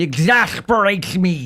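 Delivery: attempted cartoon duck voice, high and swooping. Speaker wondering who put the boats there, doing a Daffy Duck voice. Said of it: "I'm not sure that was a very good Daffy Duck voice".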